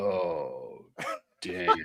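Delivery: soft, very deep, emotionless monotone, drawn-out oh. Retelling the outgoing skipper's reaction during his leaving speech, in a deep monotone voice. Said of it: "he has this just monotone, very deep voice".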